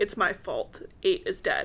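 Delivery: plain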